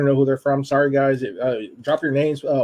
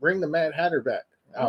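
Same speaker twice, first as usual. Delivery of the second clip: ordinary delivery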